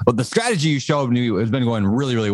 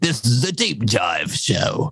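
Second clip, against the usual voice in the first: slow, drawn-out, put-on pirate voice. Speaker announces today's deep dive show, pirate voice. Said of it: "I just sound like a pirate when I say that".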